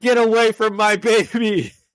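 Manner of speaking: exaggerated, angry, high-pitched mock yell. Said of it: "And she's like".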